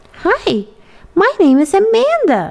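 bright, very high-pitched, drawn-out cheerful voice. Eun-hye tries out a new name in front of the bathroom mirror, cheerful. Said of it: "she said cheerfully".

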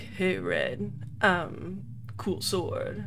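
soft, put-on sexy male voice. Describing a game's talking sword, the speaker imitates it in a sexy guy voice. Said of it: "the sword has like a sexy guy voice".

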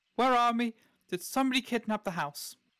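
slightly panicked, frantic outburst. A character wakes at the inn and runs downstairs, a little frantic. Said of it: "sees you a little bit frantic".

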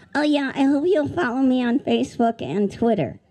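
high, squeaky voice. Voicing a puppet bird greeting the kids: Squeaky Bird puppet voice. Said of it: "They call me Squeaky Bird 'cause I squeak".

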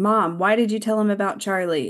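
fed-up, at-the-end-of-rope exasperated tone. Retelling a scene where a son confronts his mother: imitating an exasperated question. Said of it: "Nick is exasperated and he's like".

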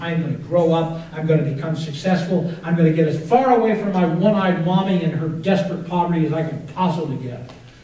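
ordinary delivery

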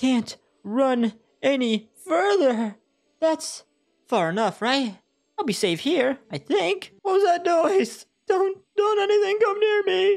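scared high, rising voice. Voicing a castle guard in a game: scared castle guard. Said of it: "I'm but a lowly soldier. / He's scared. / So there's a castle guard".

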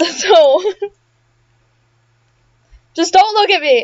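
tearful voice. Recording themselves doing the Asriel fight for their friend Violet, crying. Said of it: "And I'm also crying".

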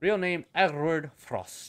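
put-on German accent. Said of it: "I gave him this German".

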